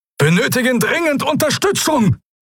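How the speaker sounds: piercing, very high shrieking. Narrator voices the captain's projection at the ring harbor mid-battle, screeching. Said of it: "kreischte die Projektion des Hauptmanns".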